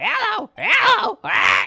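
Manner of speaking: shrill, loud, swooping, rough, squawking parrot voice. Wondering where the parrot's owner went, the speaker mimics the parrot: Polly parrot voice. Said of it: "You like my parrot impression?".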